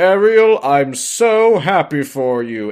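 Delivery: slow sarcastic drawl. Retelling a scene, the speaker does Triton's line to Ariel, mock-sarcastic. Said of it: "it sounds incredibly sarcastic".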